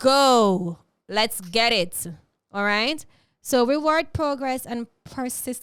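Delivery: very loud classroom-teacher voice, lecturing. Speaker urges listeners to stop procrastinating, loud, like a teacher. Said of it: "Why I'm being so loud".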